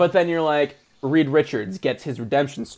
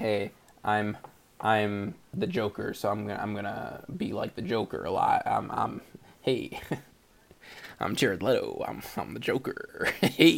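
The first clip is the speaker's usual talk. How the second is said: breathy whispered voice, breathed out; 6 semitones lower, 8 dB quieter than usual. Mocking an actor who stays in role: Jared Leto impression. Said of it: "Is that a good Jared Leto impression?".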